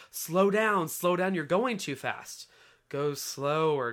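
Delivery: ordinary delivery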